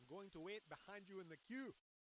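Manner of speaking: fake, put-on South African accent. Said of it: "I don't know if I have a South African".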